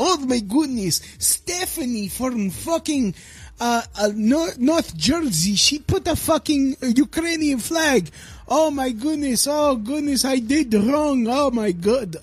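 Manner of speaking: put-on Russian accent. Mocking Ukrainian-flag profile posts, the speaker voices a reaction in a fake Russian accent. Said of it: "My Russian accent always turns into Dominican".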